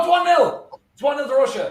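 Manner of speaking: high-pitched excited call.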